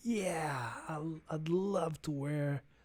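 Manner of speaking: put-on soft, very slow, failed American accent. Speaker retells asking Heather if she really wants the shoes: failed American accent as Heather. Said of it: "I can't do American accent".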